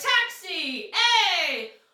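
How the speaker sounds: loud, high, drawn-out shout on "ay". Showing the shout sound like hailing a cab: shouting to hail a cab. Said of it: "if you've ever hailed a cab".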